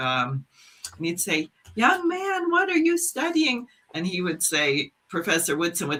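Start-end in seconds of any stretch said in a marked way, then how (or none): 1.7-3.7 very high, piping, high-pitched voice. Acting out a question to a young man about his studies, in Carver's very high voice. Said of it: "he had a very high voice".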